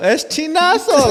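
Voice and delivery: put-on exaggerated fruity delivery. Retelling how friends kept saying the word: imitating an exaggerated fruity way. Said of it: "more and more exaggerated".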